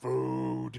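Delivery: put-on orc child voice, drawn out. Telling the scene, the orc child calls out for food, in a really deep orc child voice. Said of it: "in this really deep voice".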